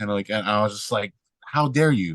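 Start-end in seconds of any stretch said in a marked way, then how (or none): 1.4-2.2 play-acted indignant, scandalized, outraged tone. Retelling a reply to a friend who did the same: retelling own outraged reply. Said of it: "so I'm triggered".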